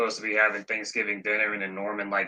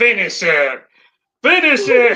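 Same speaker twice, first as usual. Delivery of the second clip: very high, loud, slow, drawn-out shriek at full volume; 13 semitones higher, 9 dB louder than usual. Quoting the Green Goblin blowing up Aunt May's house: Green Goblin voice. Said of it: "Green Goblin ... He's like".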